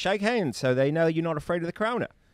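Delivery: put-on weird, faded, half-American Australian accent. Imitating a pastor telling his congregation to shake hands: weird Mel Gibson accent. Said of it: "a weird kind of Mel Gibson accent".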